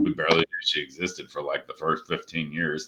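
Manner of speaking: mumbled aside, low and unclear.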